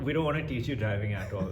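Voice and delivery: ordinary talk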